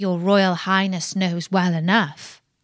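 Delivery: ordinary delivery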